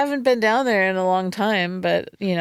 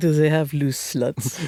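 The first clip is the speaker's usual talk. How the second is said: put-on Eastern European accent; 4 semitones lower than usual. Retelling how a brother asks about casinos: eastern european accent. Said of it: "an Eastern European accent".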